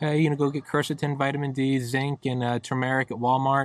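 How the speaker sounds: very soft, mild, soft-spoken delivery. Retelling what Doctor McCullough said on the podcast: soft voice imitating Doctor McCullough. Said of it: "just a very soft voice".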